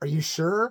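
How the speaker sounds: put-on nervous voice. Retelling how his wife asked while really nervous: imitating someone nervous. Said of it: "really nervous".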